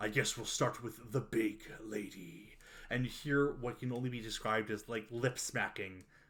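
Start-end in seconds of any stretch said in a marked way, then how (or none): 0.0-2.6 sinister demon voice, resigned then malicious. As the confession ends, voicing the demon in your head, malicious demon voice. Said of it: "the demon voice, almost resigned, uh, then malicious in your head, goes".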